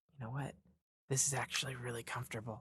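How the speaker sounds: quiet, very soft, hushed half-whisper. Retelling what someone said while going to sleep: imitating someone half-whispering. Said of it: "I hear her whisper".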